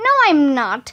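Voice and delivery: ordinary delivery, nothing marked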